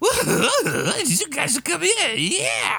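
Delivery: very high, slow creature voice with wide pitch swings.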